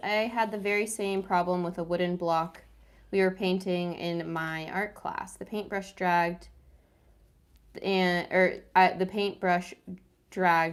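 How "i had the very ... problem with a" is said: plain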